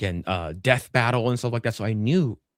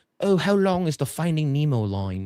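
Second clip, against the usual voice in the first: light, put-on British accent, higher pitch; 6 semitones higher than usual. Greeter retelling a British guest's question about the line, in an imitated British accent. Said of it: "this British person's like".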